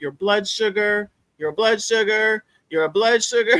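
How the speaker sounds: emphatic, repeated, hammered phrase called out loud. Speaker talking to a room, yelling so the people in the back hear. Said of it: "I'm I'm yelling at the people in the back".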